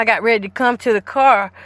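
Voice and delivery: ordinary delivery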